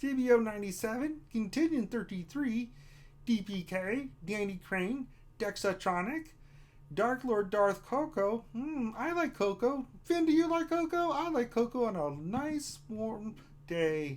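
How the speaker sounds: froggy cartoon puppet character voice. Reading chat shout-outs for a children's healthcare stream, in a Kermit the Frog voice. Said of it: "an appropriate voice seems to be Kermit".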